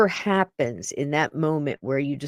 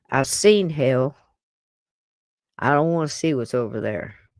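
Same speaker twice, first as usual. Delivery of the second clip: put-on Southern accent. Retelling what a soldier at Gettysburg said: imitating a soldier's Southern accent. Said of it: "he actually said it in a real Southern accent".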